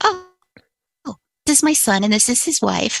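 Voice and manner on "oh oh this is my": plain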